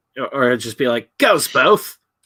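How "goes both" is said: loud, very high-pitched put-on Australian accent. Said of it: "but with an Australian accent".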